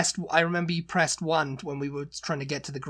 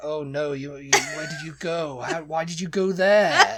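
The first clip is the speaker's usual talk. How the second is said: put-on upper-class English accent, stumbling delivery; 4 dB louder than usual. Imitating posh people reacting to someone visiting a rough area: imitating posh people. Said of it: "the posh people would be like".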